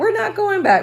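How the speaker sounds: said in a very high pitch. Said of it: "Remember, like".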